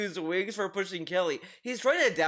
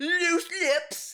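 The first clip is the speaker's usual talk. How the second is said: very high, exaggerated, annoying mocking whine; 10 semitones higher than usual. Complain about how he says a phrase by mocking someone's annoying way of talking. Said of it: "He says it in such a fucking annoying ass way".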